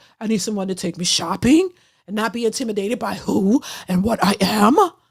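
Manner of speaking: croaky, frog-in-throat voice. Mocking Vivica wanting a man to take her shopping: croaky Vivica impression. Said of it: "she got a frog in her throat".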